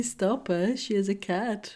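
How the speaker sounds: ordinary delivery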